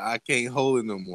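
ordinary talk, nothing marked

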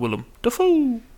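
very high frog-and-raven creature voice.

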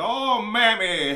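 very high, very loud, shrill cartoon-rabbit cry, belted out. Retelling the cartoon's ending, imitating Bugs Bunny. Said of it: "Bugs Bunny goes into blackface and is like".

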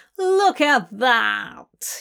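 growling, snarling voice. Burgess swirls around as Fell and Crowley enter the room, snarling. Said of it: "He snarls".

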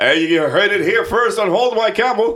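over-the-top newscaster voice, very high and loud. Closing a point on their show Hold My Camel: extra newspaper voice. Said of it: "this extra newspaper voice".

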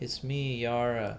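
put-on sleepy, flat, level monotone drone. Retelling a story, quoting Yara answering at the door, imitating Yara's monotone. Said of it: "Yara says in like a monotone way".

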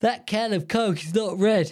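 talking through a yawn. Mid-explanation, then apologizing for it, yawning while talking. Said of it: "Sorry, I'm yawning".

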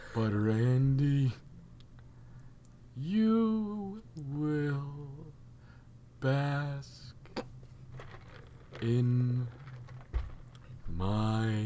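very slow, breathy, dragging drawl, "you" stretched. Imitating a wrestler cutting a promo: Keith Lee impression. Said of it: "That's exactly what it is".

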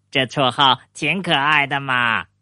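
plain

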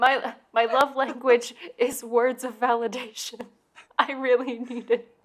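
words squeezed through high, helpless, uncontrollable laughter. Closing the show, begging listeners for reviews: laughing uncontrollably. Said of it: "I'm laughing uncontrollably".

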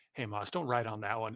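put-on very serious tone. Quoting what a fellow player said after the speaker won a card, retelling a very serious tone. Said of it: "in a very serious tone".

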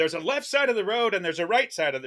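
quick, fast, half-yelled, mild ranting. Retelling how he pulled over and started yelling, retelling his own yelling. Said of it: "I start just yelling".

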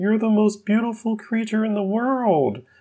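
very high, sweet-talking put-on character voice. Reading out written notes of what someone said, in a Mark voice. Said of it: "I'll do my Mark voice".

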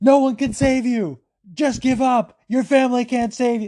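put-on, high-pitched, savage yelling. Retelling what a fighter yelled at her opponent: imitating Mallory Martin yelling. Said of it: "she was just yelling at Tiffany Masters".

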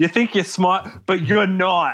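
put-on thick, laid-on-heavy Boston accent. Quoting Trish's line to Cassie, in Trish's thick Boston accent. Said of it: "This very thick Bostonian accent".

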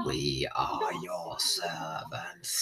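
very deep, very slow, breathy whisper. Discussing a film's voice work, quoting a line in a really low Dalek voice. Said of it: "Like, really low".

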